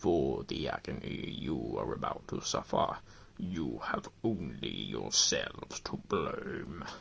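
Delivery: very low, slow, deep rumbling dragon voice. Game master voices a dragon addressing the players, in a deep rumbling dragon voice. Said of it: "The dragon's voice rumbles so deeply".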